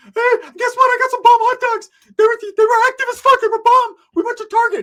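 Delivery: very high-pitched, very loud, goofy, dopey chattering voice. Retelling how Rick talked to the woman with him, imitating Rick's high-pitched stupid voice. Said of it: "He's talking all high pitched and stupid".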